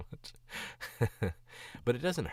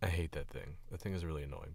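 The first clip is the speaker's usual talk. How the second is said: plain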